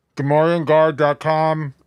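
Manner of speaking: voice changer effect. Giving a website plug with a joke voice: voice mod effect. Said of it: "That was a nice voice mod right there".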